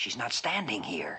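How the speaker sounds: hushed whisper under the breath. Answering the man he calls sir about someone nearby, whispering. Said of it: "Then why are you whispering?".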